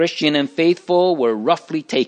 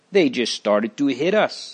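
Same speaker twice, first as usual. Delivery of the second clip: plain reading voice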